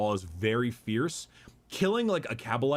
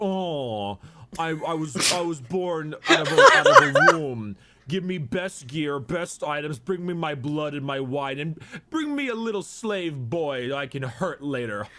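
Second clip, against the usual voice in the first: loud, hoity-toity, grand, raised voice, drawn-out oh; 4 semitones higher, 6 dB louder than usual. Explaining the Drukhari Trueborn and Halfborn to a listener, in a hoity-toity Trueborn voice. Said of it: "I love your hoity-toity voice".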